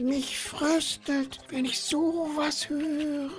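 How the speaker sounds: soft, very high, slow murmur. Narrator voicing the marmot among the gathered animals, murmured. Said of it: "murmelte das Murmeltier".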